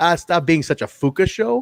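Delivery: put-on French Canadian accent. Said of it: "a French Canadian accent".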